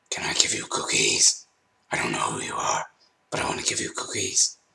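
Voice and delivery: menacing, rough, creaky demon growl. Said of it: "my "Demon Voice"".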